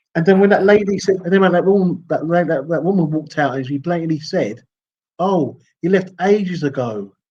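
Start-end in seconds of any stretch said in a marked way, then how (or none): 5.1-7.0 smug, very slow, drawn-out dismissive drawl. Retelling to a companion what a woman walking out said: mock-smug voice. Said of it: "she said it with a smug voice".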